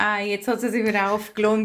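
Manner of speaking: plain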